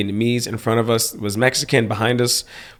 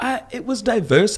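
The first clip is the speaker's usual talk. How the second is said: high mock Utah local voice, bragging, showing off. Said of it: "people in Utah like to be like".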